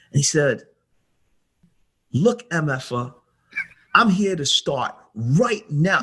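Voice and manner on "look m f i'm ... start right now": furious, sudden, raging point-blank outburst. Retelling a car conversation where the driver got angry: imitating Kobe in a rage. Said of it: "this peaceful guy to a guy in rage".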